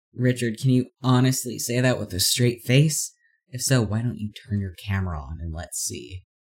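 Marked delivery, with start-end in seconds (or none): none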